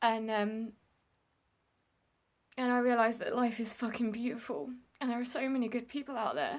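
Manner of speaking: speaking through tears, crying, tearful voice. Reflecting on giving up a seat on a tram, crying. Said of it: "And I'm crying".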